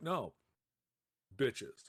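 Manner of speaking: bone-dry, dead-straight put-on deadpan delivery. Retelling how he answered at a restaurant, imitating a deadpan delivery. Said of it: "And he deadpanned it".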